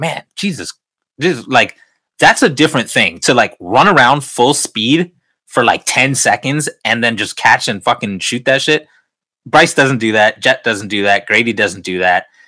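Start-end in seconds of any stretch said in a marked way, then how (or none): none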